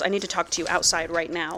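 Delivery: put-on angry voice. Retelling a story scene where a character barely controls his anger: imitating an angry demand. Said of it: "his face is twisted in anger".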